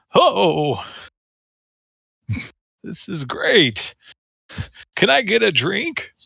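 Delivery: thrilled, worked-up laughter. A player speaks as their character to a server, excited and laughing. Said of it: "He laughs and he's like".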